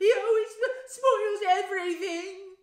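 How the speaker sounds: very loud, very high fake-sob crying wail. A boy complains to his mother, yelling between pretend sobs. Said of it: "Dudley yelled between huge pretend sobs".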